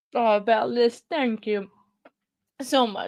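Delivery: loud, tearful speech through crying. Thanking a supporter for their support, speaking while crying. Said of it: "crying again".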